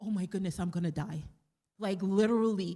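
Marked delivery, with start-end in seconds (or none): 0.0-1.2 put-on terrified tone. Retelling a moment in class after a student spoke: imitating own past terror. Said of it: "I got so terrified".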